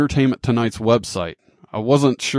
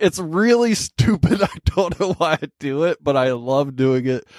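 talking through giggles, pitched up; 5 semitones higher than usual. Telling about a silly habit of one's own, laughing while talking. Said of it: "I'm laughing about it right now".

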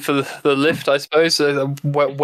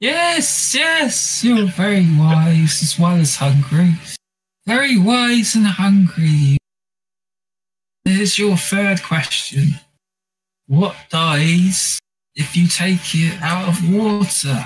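put-on spirit voice from the stomach, higher; 4 semitones higher than usual. In the game, a voice from a player's stomach poses riddles; stomach spirit voice. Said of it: "and you hear a sound coming from your stomach, [name]. Yeah. Would you like me to grant you three wishes?".

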